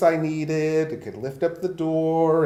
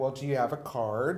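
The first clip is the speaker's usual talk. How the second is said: ordinary talk, nothing marked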